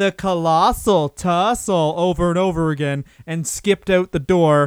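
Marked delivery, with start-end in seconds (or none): 0.0-1.9 crude camp caricature voice.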